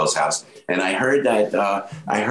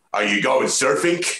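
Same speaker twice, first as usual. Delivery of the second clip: put-on Brooklyn accent, "surfing" ending in hard K; 4 semitones higher than usual. You show the first impression you ever did, a man you admired: Mister Giamalo's Brooklyn accent. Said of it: "he had a Brooklyn accent".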